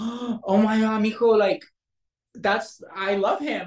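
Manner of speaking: acted super-excited gushing, high and drawn out. Retelling her reaction on hearing the speaker was on SWAT, imitating someone super excited. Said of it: "So she was super excited".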